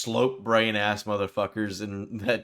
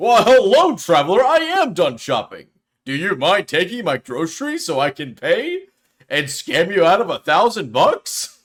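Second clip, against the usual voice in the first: belted out loudly, pitch swinging up and down; 8 semitones higher, 10 dB louder than usual. Playing a shopper after being called an Oblivion NPC: Oblivion NPC voice. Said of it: "Oblivion N P C".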